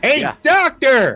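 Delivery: loud shouting, yelling. Calling to a doctor who is two feet away, shouting. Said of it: "You don't have to shout".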